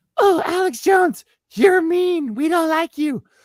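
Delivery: very high, slow, drawn-out mocking falsetto. Doing an impression of people arguing with Alex Jones. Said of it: "You wanna hear my impression?".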